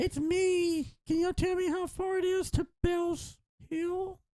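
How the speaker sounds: mimicked voice, very high, slow and drawn-out. Joking about a Wendigo that imitates people's voices: Wendigo imitating people's voices. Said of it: "imitate people's voices".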